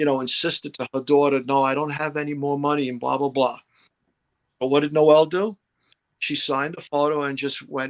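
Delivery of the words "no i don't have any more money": usual speaking voice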